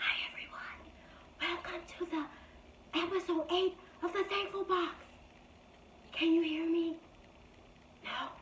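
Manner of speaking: quiet, hushed whisper. Starting a podcast episode in the quiet section of a bookstore, whispering. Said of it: "if I have to talk like this".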